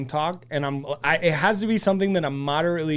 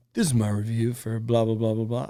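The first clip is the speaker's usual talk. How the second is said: low, low-key, unpunchy male reviewer narration; 5 semitones lower than usual. Describing sleep videos, imitating a calm, lower male reviewer. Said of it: "a not too punchy lower male voice".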